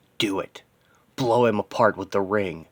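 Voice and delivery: ordinary delivery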